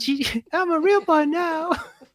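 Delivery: very high-pitched, squeaky cartoon voice. Imagining a novel read the whole way through in a Mickey Mouse voice. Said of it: "Mickey Mouse voice".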